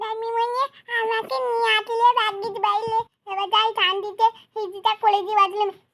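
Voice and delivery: soft, sleepy, half-asleep mumble. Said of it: "ঘুমের ঘরে কি বিড়বিড় করে বলছে".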